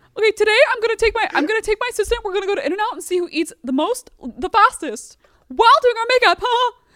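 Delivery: high, mocking put-on voice. Making fun of a celebrity and joking about getting canceled for it, do a mocking James Charles impression. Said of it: "making fun of James Charles".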